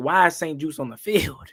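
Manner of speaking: normal talking voice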